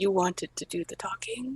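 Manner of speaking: leaning-in, hushed half-whisper. Leaning in to another party member and asking a quiet question: half-whispering in character. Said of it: "Lean in and whisper".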